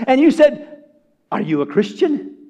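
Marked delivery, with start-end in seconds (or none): 1.3-2.3 expectant, hopeful, eagerly anticipating tone. Describing asking a man who doesn't know Jesus: mock expectant question. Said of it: "with an anticipation and an expectancy".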